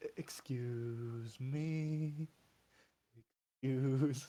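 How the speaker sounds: very slow, very gentle, soft, drawn-out speech. Acting out a character squeezing past others in a hall: gently. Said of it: "very ge-, like, gently".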